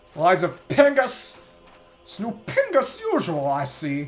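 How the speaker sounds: poorly done villain voice, slow, swooping, a bit off. Quoting a line from a game he played, bad Robotnik voice. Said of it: "I cannot do a Robotnik voice".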